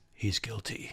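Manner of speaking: very quiet, soft and stern voice. Retelling Diedrich's answer when asked how the trial turned out, in a very stern Batman voice. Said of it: "in his very stern way and said in his Batman voice".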